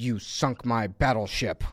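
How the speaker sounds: mock dead-straight, low, slow, steely general's voice. Retelling a trailer scene where a general speaks: imitating a general's steely straight delivery. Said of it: "with a totally straight, like, steely look goes".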